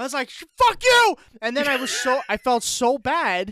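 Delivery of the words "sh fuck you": shrill, loud, very high screech. Retelling yelling at a golfer on tv mid-backswing: retelling a scream. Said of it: "I screamed".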